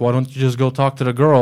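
normal talking voice

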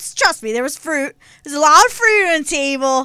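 put-on loud, high-pitched Philly accent. Describing the buffet the dad would host, the speaker puts on a Philly accent. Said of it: "That's a Philly accent".

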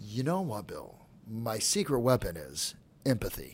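really calm, soft, slow, unhurried. Retelling how a man answered the speaker's whispered question, retelling a calm answer. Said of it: "really calmly".

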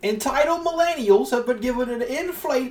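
failed fake Australian accent. Reading an article aloud in a bad put-on Australian accent. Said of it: "I need to read the entire article in Australian accent".

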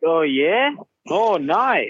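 very slow delivery, every word drawn out. Imitating a fellow race driver's reaction: Will Power impersonation. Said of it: "you did a pretty good Will Power impersonation".

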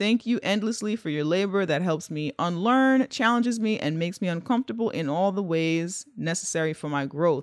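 ordinary delivery

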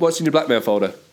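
ordinary delivery

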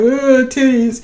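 high, slow, drawn-out dismayed groan, mock lament.

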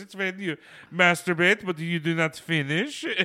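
put-on Danish accent. Retelling a guy from Denmark's answer on a show, in a Danish accent. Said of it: "With the accent".

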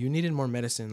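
ordinary talk, nothing marked

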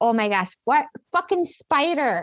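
put-on freaking out. Speaker retells spotting a spider in the bathroom, retelling freaking out. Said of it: "I'm like freaking out".

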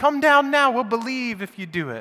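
sneering, high-pitched taunt. Speaker acts out those taunting Jesus to save himself: imitating a mocking, sneering crowd. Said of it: "They're mocking him. ... Can you hear the tone?".

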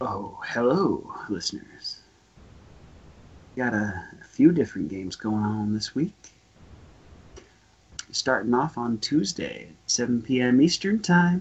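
very quiet, slow, low, seductive sultry voice. Reading the week's game schedule to listeners, low, slow sexy voice. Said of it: "This is when we go low and slow".

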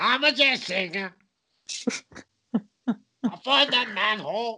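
weird, very high, slow cartoon voice. Goofing around on a podcast about Mario films, put on a weird Wario voice. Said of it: "Wario is a very weird voice today".

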